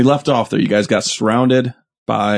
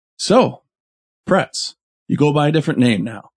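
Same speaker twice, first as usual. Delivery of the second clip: amused voice laced with a little chuckle; 5 semitones higher than usual. Voicing the Duke as he turns around in the hallway, chuckling while speaking. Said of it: "lets out a kind of a chuckle".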